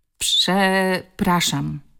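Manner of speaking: stammering, stuttering speech. A boy is forced to apologize to a classmate, stammered. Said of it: "wyjąkał".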